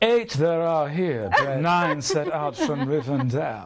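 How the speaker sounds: voice of ultimate superiority, elf-like. Demonstrating the voice of ultimate superiority, in a Lord of the Rings elf voice. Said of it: "elf voice is from Lord of the Rings, and it is the voice of ultimate superiority".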